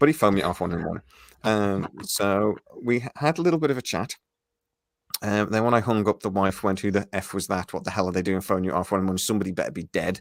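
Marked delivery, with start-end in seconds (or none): none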